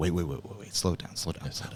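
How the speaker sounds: breathy, hushed, insistent cutting-in. Imitating Howard Stern slowing things down on the radio: imitating Howard Stern slowing a guest down. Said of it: "he's always slowing things down".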